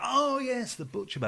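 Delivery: put-on northern English accent. Retelling what a man said about the butcher bird, imitating Chris the Birdman's northern accent. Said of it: "this guy had this northern accent".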